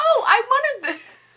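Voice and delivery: high, slow, excited gushing. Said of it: "I'm like".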